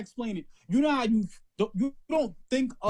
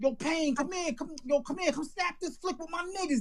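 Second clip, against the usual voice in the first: put-on pitched-up Bronx street-talk accent; 6 semitones higher, 4 dB quieter than usual. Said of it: "This is how he's talking".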